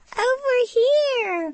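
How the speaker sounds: very high, distant, squeaky frog voice. Narrator voicing a frog calling from far off: squeaky faraway frog voice. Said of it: "squeaked a faraway frog voice".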